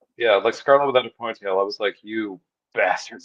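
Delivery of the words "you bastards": angry, outburst-like heated voice. Retelling a reaction to a disappointing toy release: retelling own angry outburst. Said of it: "I'm still mad about it".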